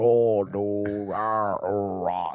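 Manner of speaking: very slow, simple-minded drawl, groping for words. Imitating how the floor installer talked: imitating the installer's way of talking. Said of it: "That's how he talked".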